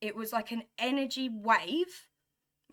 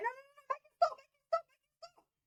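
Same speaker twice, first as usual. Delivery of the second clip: put-on very high, frightened, scared pleading tone. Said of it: "I got so scared".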